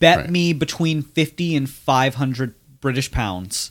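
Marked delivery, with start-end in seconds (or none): none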